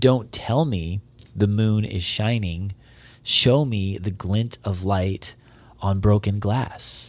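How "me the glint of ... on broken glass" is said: ordinary talk, nothing marked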